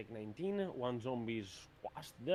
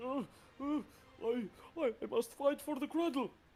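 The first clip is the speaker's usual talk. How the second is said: high, terrorized hill giant voice. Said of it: "Though this will say".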